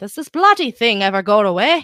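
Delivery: attempted Irish accent. Rereading a viewer's question aloud, Irish accent. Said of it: "That's Irish".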